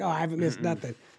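ordinary delivery

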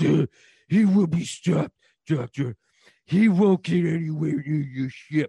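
grim, brooding heroic voice. Batman answers the Doctor about stopping Spawn, sounding like Keanu Reeves trying to be Batman. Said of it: "You sound like Keanu Reeves trying to be Batman".

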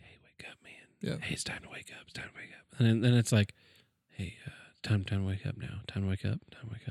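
hushed, gentle, very soft, breathy coaxing near whisper. Describing the alarm you wish you had, voicing it very soft. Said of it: "I want an alarm that starts out real soft".

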